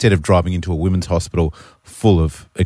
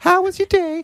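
high-pitched voice. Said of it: "his ex-wife's like".

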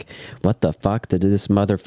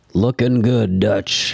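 put-on elderly man's voice. Retelling what an old man said to dutch, in a put-on old man voice. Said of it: "in old man voice".

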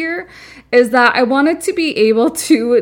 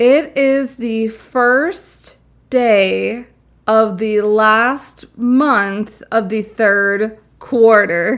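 slow, careful, word by word, "day" drawn out. A podcast host greets listeners on the episode's air date, saying it slowly. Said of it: "I had to say that slow".

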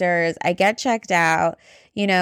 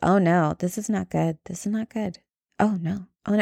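mock muttering, low under the breath; 4 dB quieter than usual. Retelling what a woman reading laptop results said, imitating her muttering under her breath. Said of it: "she's like saying this under her breath".

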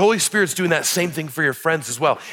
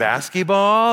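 put-on toddler voice, rising intonation, higher pitch; 3 semitones higher than usual. Showing how his two-year-old's voice goes up at the end. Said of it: "everything goes up at the end".

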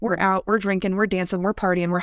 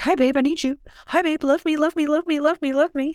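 high, rushed, clingy, needy pleading; 8 semitones higher than usual. Describing a nice guy who only takes from her, imitating a needy nice guy. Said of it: "just want to take from us".

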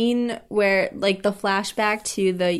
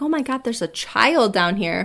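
alarmed, frightened, panicked outburst. Retelling own reaction while watching a movie scene: retelling own panicked reaction.

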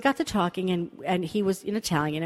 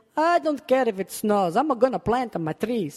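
pitched-up, put-on pseudo-Italian accent; 5 semitones higher, 4 dB louder than usual. Quoting what some people said, in a pseudo-Italian accent. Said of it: "my pseudo-Italian accent".

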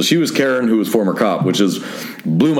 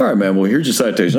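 ordinary delivery

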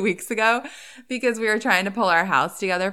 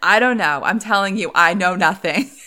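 very animated, lively put-on voice; 5 dB louder than usual. Speaker acting out a woman answering someone on the line, retelling in a very animated voice. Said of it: "in a very animated voice".

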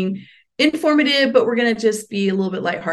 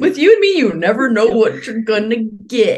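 clumsy, bad put-on Southern US accent; 4 dB louder than usual. On a first recording together, quote a film character to your co-host in a bad Forrest Gump impression. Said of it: "That was a bad impression of Forrest Gump".

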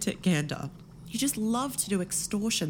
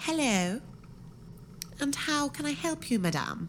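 put-on polite receptionist voice, pitched up; 6 semitones higher than usual. Character trying out a new career, greeting someone, in receptionist voice. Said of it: "put on my receptionist voice".

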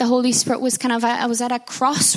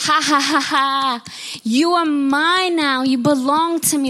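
dreadful, haunting, horrible voice with laughter; 3 semitones higher than usual. Retelling a frightening vision of a voice in a dark room: imitating a horrible voice. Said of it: "This horrible voice".

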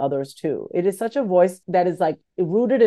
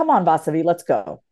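mock firm, stern, no-nonsense voice. Voicing the inner voice that pushes past excuses: imitating a quiet, stern inner voice. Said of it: "It's stern".

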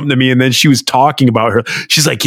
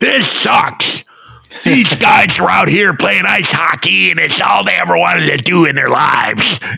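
mimicked angular lisping rant, higher pitch; 5 semitones higher than usual. Retelling a coach ranting after a bad loss: imitating a coach's angular lisp. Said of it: "unbelievable angular lisp".

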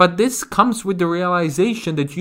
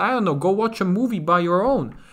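plain

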